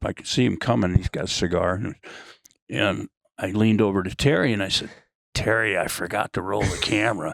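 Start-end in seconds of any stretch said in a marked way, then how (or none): 5.3-7.3 hushed, half-whispered stage whisper. Retelling leaning over to the stunt coordinator: imitating a half-whisper. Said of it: "I thought I was whispering".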